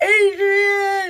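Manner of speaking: very loud, high, long drawn-out yell. Picturing Rocky Balboa with boxing gloves for Aries: poor Rocky Balboa impersonation.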